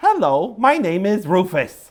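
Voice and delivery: high, very slow, drawn-out puppet voice, syllable by syllable. Showing how a mouth puppet talks: Rufus the dog puppet voice. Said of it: "it looks like this".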